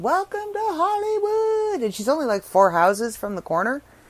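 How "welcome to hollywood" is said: shrill, very high, yelled calling out. Recounting turning onto a friend's street and calling out, retelling her own yell. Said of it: "I yell out".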